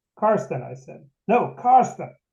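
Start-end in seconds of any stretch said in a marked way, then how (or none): 1.3-2.1 put-on loud, high, exasperated bark, at wit's end. Retelling a man correcting how his name is said; retelling a frustrated bark. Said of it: "he barked in maximum frustration".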